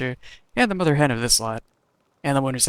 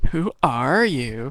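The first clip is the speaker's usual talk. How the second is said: obnoxious, annoying, mocking copycat voice. Voicing a fake companion mimicking the hero: obnoxious mocking mimicry. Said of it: "mimic you in an obnoxious voice".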